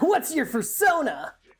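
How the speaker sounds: high-pitched anime-style character delivery. Asked to say it like an anime thing, anime character voice. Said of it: "Say it like an anime thing".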